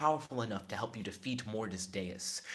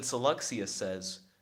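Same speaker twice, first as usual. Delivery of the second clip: ordinary talk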